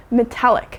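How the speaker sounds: metallic with weight on the second syllable tal. Teaching the next vocabulary word, metallic, with stress on talic. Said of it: "we put the stress on the talic".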